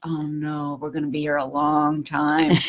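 hushed, private mutter under the breath. Retelling what John Whalen muttered when people had a dog: imitating John Whalen muttering under his breath. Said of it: "I could almost hear under his breath".

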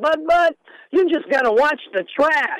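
voice pushed very high in pitch. Retelling Willie's answer about playing center field, imitating Willie's high voice. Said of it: "he looked at me with that high voice".

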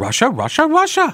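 put-on very high, whiny teen voice. Discussing flagged COVID tweets, the speaker does a Jan Brady impression. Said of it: "that's my Jan Brady impression".

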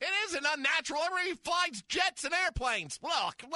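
exasperated, worked-up ranting.

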